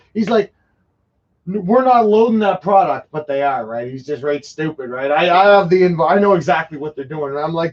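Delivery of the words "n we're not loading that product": mock, mild token shout. Retelling the guy on the ship yelling back: imitating a guy yelling. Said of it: "So Buddy's yelling".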